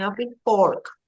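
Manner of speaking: ordinary talk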